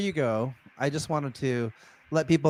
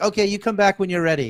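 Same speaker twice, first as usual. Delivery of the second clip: high-pitched, barking, yelling woman's voice; 6 semitones higher, 4 dB louder than usual. Recalling the lady at the Chinese restaurant answering a customer, imitating a restaurant lady yelling. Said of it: "she would just like yell at you".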